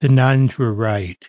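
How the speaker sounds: gently delivered, gentle tone after a pause. Acting out the speaker's usual reply when asked about their blindness, retelling in a soft voice. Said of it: "say in a soft voice".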